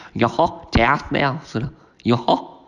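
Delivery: slow, silly, stretched-out delivery. Speaker discussing a comedy show, slipping into a Goofy impression. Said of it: "I'm gonna stop doing impressions of Goofy now".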